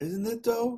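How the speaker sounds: high Chicago accent, "isn't" said with d. Repeating their own phrase, the speaker does a Chicago accent. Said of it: "I said it with a D, like Chicago".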